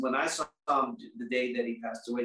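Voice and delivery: ordinary talk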